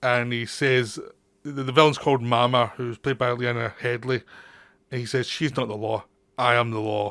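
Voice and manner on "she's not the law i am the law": flat, deadpan delivery, lower pitch. Describing a film scene, quote his line about the villain Mama, retelling a deadpan line. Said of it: "he says it's so deadpan".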